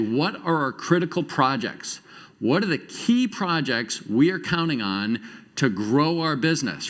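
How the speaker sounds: ordinary talk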